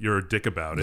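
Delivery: plain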